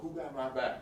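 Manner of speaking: normal talking voice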